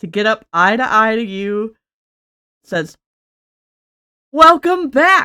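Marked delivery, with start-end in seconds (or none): 4.3-5.3 very loud, high, booming, cheerful. Narrator voices a character welcoming the listener back, in a loud booming happy voice. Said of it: "in her very loud, booming, happy voice".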